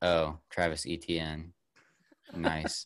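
low, flat, drained, lifeless monotone with no energy. Recounting the group's tired car-ride reaction to a draft pick, imitating a flat, no-energy reaction. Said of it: "we just had no energy".

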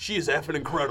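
loud, fiery radio-firebrand ranting delivery. Praising an actress, sounding like Alex Jones. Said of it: "You sound like Alex Jones right now".

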